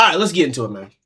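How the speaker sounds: distant off-mic yell. Starting the video while far from the mic: yelling. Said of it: "I'm yelling".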